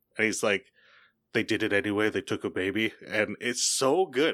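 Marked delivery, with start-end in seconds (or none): 1.3-2.9 put-on voice dropping really low. Describing a performer's scene talking to Ruby's mom, imitating a really low voice. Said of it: "his voice gets really low".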